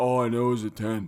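put-on deep big-man voice. Quoting a basketball commentator on a slam dunk: imitating a seven-foot-tall man's voice. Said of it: "was that a bad impression?".

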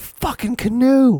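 frantic, very high, piercing scream. Retelling how someone yelled while still half asleep: imitating a scream. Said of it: "he's sitting here screaming".

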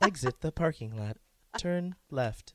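car sat-nav GPS voice. Asked by the other speaker to do a Siri voice, giving directions in a navigation voice. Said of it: "I sound a ca- ca- like ca- a navigation".

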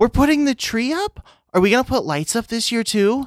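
put-on very high little-girl voice, pitch way up. Voicing a daughter character who comes around the corner asking about lights. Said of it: "Lucy comes around the corner and is like".

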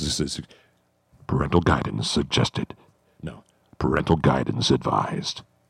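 low, deep, sultry voice. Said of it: "It's my Pornhub voice".

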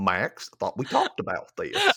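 put-on cartoon dad voice. Retelling how Goofy talked to his son: Goofy voice. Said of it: "He was like".

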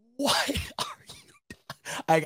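speaking through laughter. Reacting to an overtime halfback dive call on 2nd and 15, laughing while talking. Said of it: "I got tears in my eyes because I'm laughing".

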